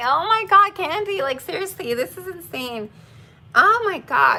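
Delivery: high, tearful crying voice. Speaker giving a goodbye toast to the group, already crying. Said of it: "I am already crying".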